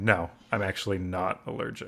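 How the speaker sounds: low, slow, flat, expressionless deadpan. Retelling someone's earlier reply: imitating Emilio's deadpan reply.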